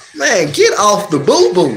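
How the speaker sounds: normal talking voice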